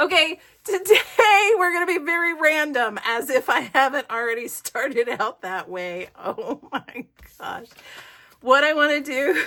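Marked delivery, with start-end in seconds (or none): 6.2-9.4 breathy, hard-laughing exclamation. Host opening the episode, laughing so hard they're crying. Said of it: "I'm crying, I'm laughing so hard".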